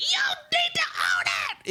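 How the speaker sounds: mock very high, shrill, drunken screaming. Telling a fellow Housewives fan what you love about the show, imitating drunk Heather screaming. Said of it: "drunk Heather getting a little bit red in the face and screaming like".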